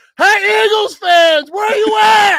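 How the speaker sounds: put-on high, slow, loud drunken yell. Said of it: "But I was yelling".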